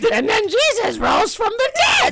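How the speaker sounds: put-on very high, swooping, comic Russian accent, preacher-like. Showing an imitation of a church priest that became Doofenshmirtz: Doofenshmirtz voice. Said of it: "my imitation of him just became Doofenshmirtz".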